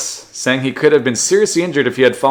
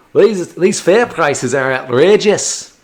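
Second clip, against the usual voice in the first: bad Australian accent attempt slipping into Scottish accent; 4 semitones higher than usual. Voicing a fare-dodging tram rider, aiming for Australian, in an accidental Scottish accent.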